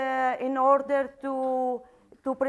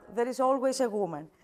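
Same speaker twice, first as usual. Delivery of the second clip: rushed, overly fast delivery. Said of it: "I'm talking too fast".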